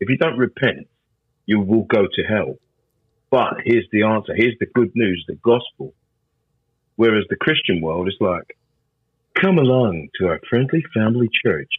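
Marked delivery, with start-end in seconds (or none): 9.4-11.7 laid-on, fake, put-on American accent. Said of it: "sorry to do the American accent".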